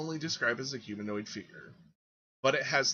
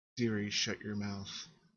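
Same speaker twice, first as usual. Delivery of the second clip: sudden sugary, sweet-sounding voice; 4 semitones lower, 4 dB quieter than usual. Voicing a woman heard on the stairs: sweet voice. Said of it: "a sweet voice suddenly says".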